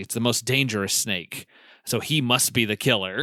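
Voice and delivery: ordinary talk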